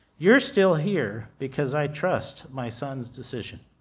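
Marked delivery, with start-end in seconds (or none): none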